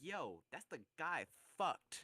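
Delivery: mock gleeful, cheery, happy-sounding tone. Retelling a show scene at a fair, acting out a character in a mock-happy tone. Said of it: "in like a happy ass tone".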